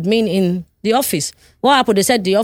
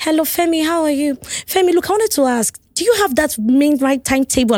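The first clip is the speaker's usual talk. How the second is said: sweet, ladylike, high female voice; 7 semitones higher than usual. Recounting a phone call, the speaker imitates the caller in a sweet female voice. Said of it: "this is a female voice. And this voice is sweet".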